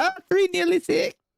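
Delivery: put-on very high, squeaky small-child voice. Describing a skit performer who acts like a small child; squeaky little kid voice. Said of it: "he talks in a real squeaky little voice".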